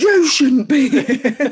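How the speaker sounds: very loud, drawn-out, furious angry shout. Retelling how an angry young man snapped back at an elderly lady: retelling an angry retort. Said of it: "'cause he was so angry, he just turned around and went".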